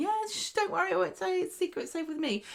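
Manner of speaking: put-on very high, acted, giggly, tipsy laughing chatter. Retelling a character promising to keep a secret: imitating tipsy laughing speech. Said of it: "laughing and going".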